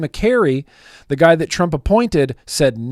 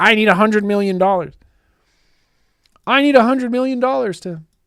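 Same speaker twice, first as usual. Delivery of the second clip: put-on, frantic, higher-pitched politician voice; 5 semitones higher than usual. Mocking a politician who would lose her mind: imitating Debbie Wasserman Schultz freaking out. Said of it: "She'd lose her mind".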